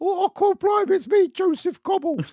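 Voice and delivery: very high squeaky Cockney voice. Discussing the story's characters, imagining Joseph Cobble as a squire, in squeaky Cockney voice. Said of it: "not as a squeaky voice teen".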